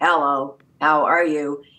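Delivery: very robotic, non-human, synthetic computer voice. Explaining early concatenated speech synthesis, demonstrating in a robotic voice. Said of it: "very robotic and very non-human".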